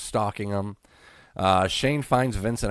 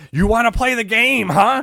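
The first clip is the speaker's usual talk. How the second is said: very loud, shrill, high-pitched screaming; 9 dB louder than usual. Retelling a wrestling segment: imitating Vince screaming. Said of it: "Vince just screaming".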